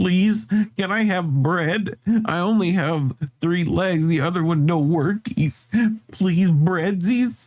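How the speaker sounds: high, pleading dog voice. Voicing a three-legged dog in the game begging for bread: voicing a begging three-legged dog. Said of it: "He's like".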